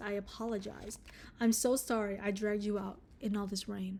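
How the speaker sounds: soft, gentle, feminine tone. Retelling what a man said while tending to Takeuchi: imitating a gentle womanly tone. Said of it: "in a gentle tone that a woman might use".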